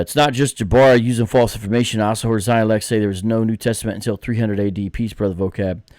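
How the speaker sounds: usual speaking voice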